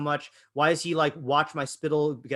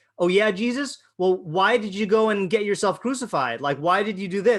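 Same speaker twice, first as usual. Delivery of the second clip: needling, scornful, mocking sarcasm; 5 semitones higher, 4 dB louder than usual. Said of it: "sarcastically by saying".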